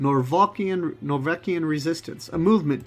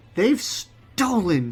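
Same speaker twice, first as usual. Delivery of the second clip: words hissed out; 3 semitones higher than usual. Narrating a fantasy game scene, voicing a character's line, hissing. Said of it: "she hisses".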